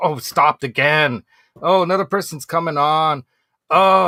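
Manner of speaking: slow, drawn-out, worried, anxious, stressed grumbling. Acting out a stressed elevator rider as it stops: imitating a stressed elevator rider. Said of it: "you're stressing about it".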